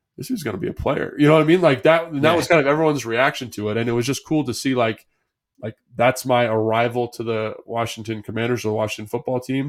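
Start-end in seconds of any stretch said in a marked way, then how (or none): 0.2-1.2 hushed, whispered under the breath. Recalling what someone said in the film room after the game, under his breath. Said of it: "under his breath".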